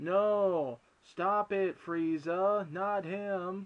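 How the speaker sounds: play-acted stiff, flat, very slow read-off-the-page delivery. Retelling an old dub performance of a scene: imitating Sean's flat line read. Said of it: "it sounded like a line read".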